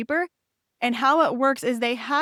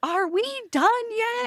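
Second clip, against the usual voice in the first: put-on very high, loud, shrill, fed-up little kid voice; 11 semitones higher than usual. Retelling a four-year-old's question on a rainy night walk: imitating a loud complaint. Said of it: "So loud".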